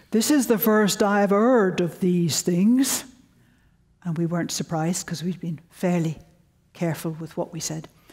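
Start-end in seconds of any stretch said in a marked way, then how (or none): 0.1-3.0 imitated Yorkshire accent, spoken slowly. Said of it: "I'll imitate his Yorkshire accent".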